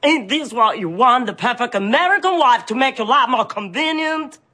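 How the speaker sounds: fake Texan accent, pitched high. A wife tries to be the perfect American wife, fake Texan accent. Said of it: "Do you think that's an American accent?".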